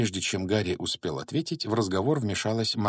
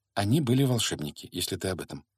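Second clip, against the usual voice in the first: usual speaking voice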